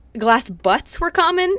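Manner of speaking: speech broken by giggles. Listing strange glass delusions, laughing while talking. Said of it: "I cannot say that without laughing".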